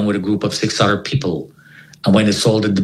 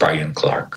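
put-on robot-like delivery, lower; 5 semitones lower, 4 dB quieter than usual. Retelling how a stranger introduced himself: imitating a robotic voice. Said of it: "like a robot".

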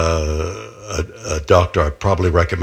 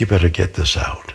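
tender voice full of caring love. Retelling what a doctor said to him, quoted in a put-on loving tone. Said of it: "with love in his voice".

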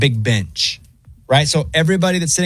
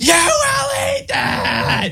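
put-on scream, higher. Retelling a mother's answer at a restaurant table: imitating a mother screaming. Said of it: "screams right back, screams, top of her lungs".

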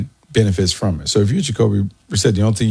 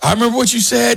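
mock very high, shrill screaming voice. Telling Andy a story, the speaker acts out what another man was screaming: retelling a scream. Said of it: "He's screaming like".

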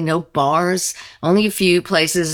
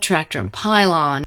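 ordinary talk, nothing marked

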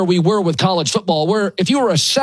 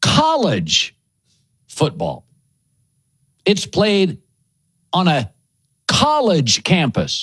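slow, deliberate, each word given its own time; 3 semitones lower than usual. Naming a favorite sport, saying its name: speaking slowly. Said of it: "I'll speak slowly".

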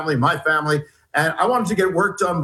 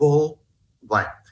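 put-on whisper. Retelling what a passenger on a plane said: imitating a whisper. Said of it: "He whispers and he says".

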